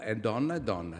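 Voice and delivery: plain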